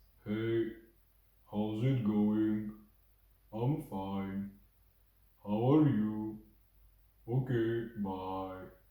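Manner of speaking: deep, low, slow, unhurried voice. Describing an odd guy in class and showing how he talks, imitating Michael's deep slow voice. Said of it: "he just has this deep voice and he talks pretty slowly".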